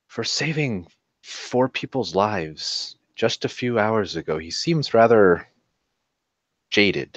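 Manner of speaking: hushed, leaning-in stage half-whisper. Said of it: "He would lean over to [name] and just whisper".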